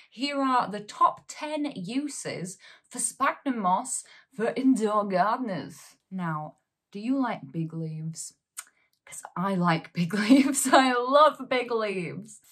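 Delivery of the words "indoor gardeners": put-on broad, thick Yorkshire accent. Presenter introduces top ten uses of sphagnum moss, broad Yorkshire accent. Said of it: "[broad Yorkshire accent]".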